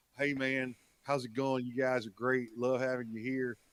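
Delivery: put-on slow, laid-back Californian accent. Imitating how a friend talks: slow california accent. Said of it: "the California accent".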